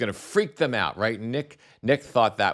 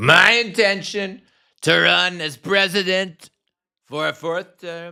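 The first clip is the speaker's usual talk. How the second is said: very loud, very high announcing voice; 10 semitones higher, 8 dB louder than usual. Repeating a line from a played clip: Trump impression. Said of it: "do my Trump impression".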